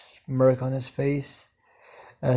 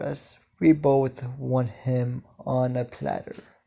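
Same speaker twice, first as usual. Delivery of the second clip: ordinary delivery, nothing marked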